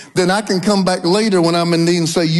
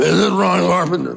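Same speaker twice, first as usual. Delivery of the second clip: gruff, rough, gravelly growl. Retelling an unexpected phone call from an unknown caller: gruff voice imitating Roe Messner. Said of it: "That's exactly the way it sounded".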